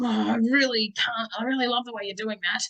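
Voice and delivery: sarcastic, hollow tone that plainly means the opposite. Example of a parent praising a child sarcastically: sarcastic. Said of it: "That's clearly sarcasm".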